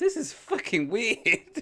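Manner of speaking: high, slow, weirded-out, baffled drawl.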